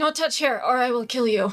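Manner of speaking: sleepy, half-asleep murmuring. Playing a half-asleep character holding someone's hand: murmuring half asleep. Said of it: "I'm, like, murmuring".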